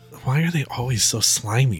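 muttered under one's breath. Turning to walk home, the character says it under their breath, muttered. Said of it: "I'll say under my breath".

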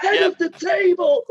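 very loud, very high, drawn-out commentator call. Imitating what a wrestling commentator now shouts: Michael Cole shouting. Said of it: "Is that what Michael Cole's shouting out now?".

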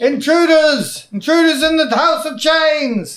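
very high-pitched, loud shout. Voicing guards who raise the alarm about intruders: shouting. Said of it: "others are shouting".

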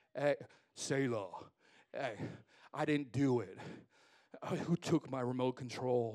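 put-on deep, dropped teenage voice after breaking. Speaker imitates a 13-year-old boy heard in the house, imitating a teen's dropped voice. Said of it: "their voice octaves like drop".

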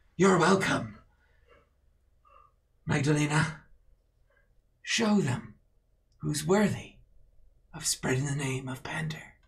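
stirring, self-righteous, grandiose, rousing oratory. Game master voicing a leader urging followers to spread the name of Pander, rousing rally speech. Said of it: "My brethren, today we stand and fight together because we've stood on our own too long. Those who have rejected us have chosen their side and will pay the price".

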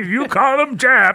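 high, slow, goofy character voice. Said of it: "get Jake's name wrong and talk like this".

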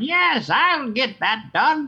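loud, very high, drawn-out villain voice. Talking about the voice actor for Skeletor and showing how he talks: Skeletor voice. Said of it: "You have an incredible Skeletor voice".

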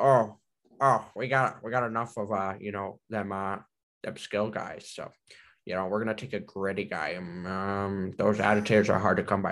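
put-on old man voice with long, stretched um. Imitating a hockey executive explaining a draft pick: Pierre Dorion impression. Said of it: "that's my, uh, Pierre Dorian".

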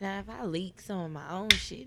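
normal talking voice

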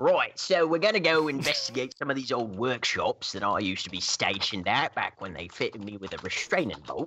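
attempted cockney accent sounding Australian. Playing a character proposing to investigate old workshops: attempted cockney accent sounding australian. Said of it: "You're a bit too space Australian".

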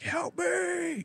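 acted, very high, rough, creaky screaming. Retelling a creepy video of someone in a field: imitating someone screaming. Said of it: "He's just screaming, like".

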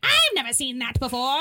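storybook wicked witch voice. Retelling Franny's line from the movie: Wicked Witch voice. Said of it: "Franny talks like the Wicked Witch of the".

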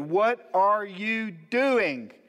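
play-acted, very slow, loud, high, drawn-out shout. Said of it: "I shouted it, you know, as loud as I could".

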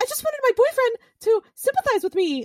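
high-pitched, voice jumping way up. Retelling what a woman said to her boyfriend: voice goes really high. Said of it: "my voice went really high".

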